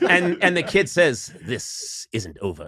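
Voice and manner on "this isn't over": low, dropped voice, tough movie hard-man delivery. Retelling the cartoon mother who is a version of Charles Bronson: Charles Bronson voice. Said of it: "everyone's a version of Charles Bronson".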